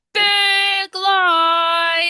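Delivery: big loud voice, words drawn out. Modeling a phrase for a group to repeat after, big voice. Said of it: "repeat after me with your big voices".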